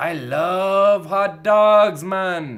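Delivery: put-on semi-Jamaican, semi-American accent. Recalling a Shenmue character, quoting him in a semi-Jamaican, semi-American accent. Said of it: "a semi-Jamaican, semi-American accent".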